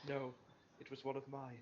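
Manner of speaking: muttered under breath. A player voices his character answering the group under his breath. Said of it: "he's just going to under his breath go".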